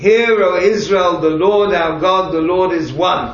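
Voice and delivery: loud crying-out call, like a prayer leader's chant. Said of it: "the leader of the prayers cries out".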